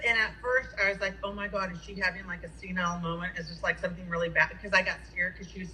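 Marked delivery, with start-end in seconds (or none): none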